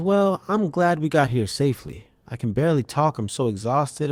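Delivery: ordinary talk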